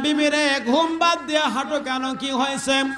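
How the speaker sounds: high, calling-out voice.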